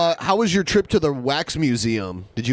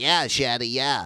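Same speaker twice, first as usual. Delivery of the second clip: lighter voice, easy and relaxed; 2 semitones lower, 4 dB quieter than usual. Describing how the two sound together: imitating Rev. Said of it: "And he's like".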